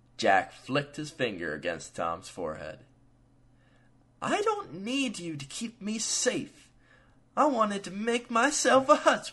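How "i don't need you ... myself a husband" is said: very high, whining, complaining tone. Polly protests to Jack, who just flicked Tom's forehead, whining. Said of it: "Polly whined".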